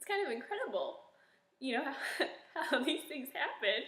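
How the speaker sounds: tearful voice, close to crying, fighting back tears. Recalling getting set up for Christmas years ago, the speaker is on the verge of tears. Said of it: "Sorry, I'm gonna cry".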